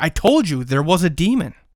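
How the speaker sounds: shrieked, full-throat screaming outburst. Retelling what Jenny Beth screamed while pointing: imitating Jenny Beth screaming. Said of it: "screaming, like".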